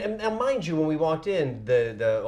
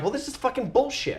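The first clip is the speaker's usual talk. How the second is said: mock very high, pissed-off angry exclamation; 11 semitones higher than usual. Retelling being thrown out of the place: imitating own angry remark. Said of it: "and I'm pissed off".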